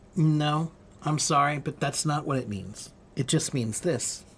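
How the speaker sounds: soft, calm, cool, detached, dispassionate tone. Imitating a biblical scholar answering questions: imitating a calm, dispassionate tone. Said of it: "He speaks very, very calmly and dispassionately".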